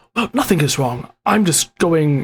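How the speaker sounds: hushed, quiet voice. Voicing a character who was told to shush: hushed tone. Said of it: "he'll still kind of have the hushed tone".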